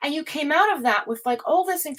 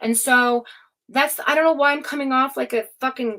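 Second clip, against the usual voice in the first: ordinary delivery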